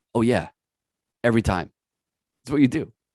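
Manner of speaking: mock deadpan, flat delivery. Retelling what an ex-snowboarder said about snowboarding, retelling a deadpan reply. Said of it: "deadpan's like".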